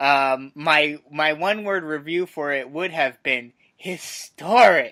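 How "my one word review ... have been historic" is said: heavily sarcastic tone, dripping with sarcasm. Giving a one-word review of last week's show: sarcastic. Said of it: "I hope you hear the sarcasm in my voice".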